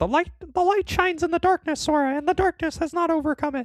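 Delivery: very high, little cartoon mouse character voice. Imitating a line spoken in a final boss speech: Mickey Mouse voice. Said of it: "you can't handle Mickey being like".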